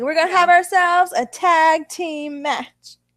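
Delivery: slow, drawn-out calling voice. Quoting what Teddy Long always says: Teddy Long voice. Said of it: "That's what he says, though. He's like".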